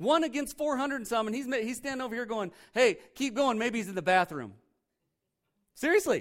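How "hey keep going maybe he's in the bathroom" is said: put-on mocking jeer, higher and louder. Retelling a prophet taunting four hundred rival prophets: mocking taunt, retelling. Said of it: "he's making fun of 'em".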